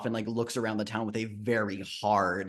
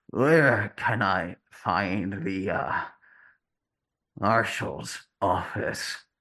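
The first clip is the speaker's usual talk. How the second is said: put-on damaged, slurred character voice; 4 dB louder than usual. Storyteller voicing a stranger who speaks up in the scene: damaged, slurred voice. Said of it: "it sounds damaged. Like his words come out in this like slurry".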